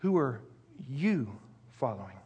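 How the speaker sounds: heavy stress on the pronoun "you". Putting the emphasis on the pronoun in a question: stress on you. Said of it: "Let's put the emphasis now on the pronoun for a moment".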